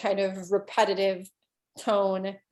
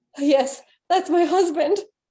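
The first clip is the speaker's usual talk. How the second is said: panicked woman, very high and very loud; 9 semitones higher, 8 dB louder than usual. Voicing a panicked woman answering at her door: panicked woman's voice. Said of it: "she is now even more panicked".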